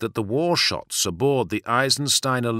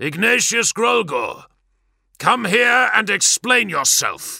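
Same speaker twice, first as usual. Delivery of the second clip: very high, booming, loud voice; 11 semitones higher, 5 dB louder than usual. A captain ducks beneath a blast hatch and calls out across the bay, booming. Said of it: "The captain's voice boomed".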